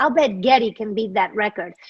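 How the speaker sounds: ordinary talk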